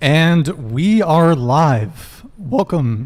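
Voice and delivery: voice cracking. Podcast host opening the live show, voice cracking. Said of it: "voice crack".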